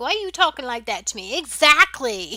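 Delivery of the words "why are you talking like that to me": speaking in a fish voice. Playing a fishing game, speaking as the fish: voicing a fish. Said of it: "fish was like".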